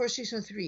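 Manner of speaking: plain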